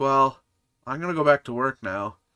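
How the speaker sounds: uneasy, awkward delivery. Retelling a game character ending the conversation: imitating an awkward goodbye. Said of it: "she just gets really awkward very quickly".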